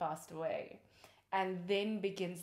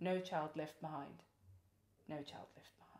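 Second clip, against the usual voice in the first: mock sweet tone turned menacing and threatening; 6 dB quieter than usual. Retelling how a film's caseworker says her mantra: imitating a threatening delivery. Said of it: "she just threatens with it".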